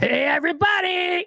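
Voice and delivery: very high-pitched puppet-style voice. Greeting chat after naming the voice: Grover voice. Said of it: "Grover voice".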